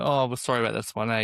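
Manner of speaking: ordinary talk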